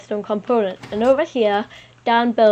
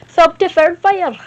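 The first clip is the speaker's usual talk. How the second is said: put-on Scottish accent, much higher, louder; 8 semitones higher, 7 dB louder than usual. Showing viewers how to say the channel slogan, Scottish accent. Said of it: "Say it in a Scottish accent".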